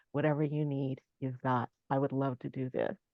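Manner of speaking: imitated soothing, steady, calm, reassuring voice. Retelling how a performer answered a request: imitating a calm, reassuring voice. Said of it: "in that very stunning, very calm, very, you know, "I got you, girl" voice".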